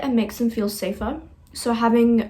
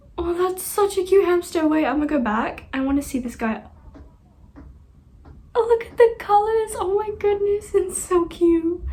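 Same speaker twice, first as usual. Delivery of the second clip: high, teary voice, crying while talking; 9 semitones higher than usual. Speaker crying while looking at a cute hamster, crying, teary voice. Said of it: "I don't know why I'm crying".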